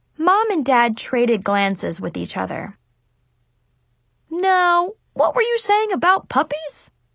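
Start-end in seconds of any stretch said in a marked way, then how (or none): 4.3-6.9 curious, inquisitive, pitched-up tone. Narrator reads Dad asking Brianna a question, curious. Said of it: "Dad asked Brianna curiously".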